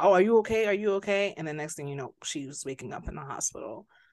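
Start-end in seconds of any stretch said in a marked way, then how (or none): 0.0-1.3 loud, frantic, panicked screaming. Retelling how a man noticed a woman looked sick, retelling a scream. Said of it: "he's screaming like".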